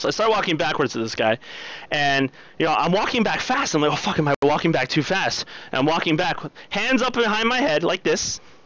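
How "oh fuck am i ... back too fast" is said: ordinary talk, nothing marked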